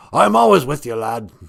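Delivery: loud, rough, growling pirate voice. After thanking listeners, a farewell line as Gitchi Manadu in a pirate voice. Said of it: "he sounds like a pirate".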